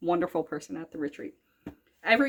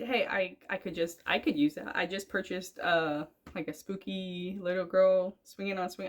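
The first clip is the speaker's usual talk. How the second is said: ordinary talk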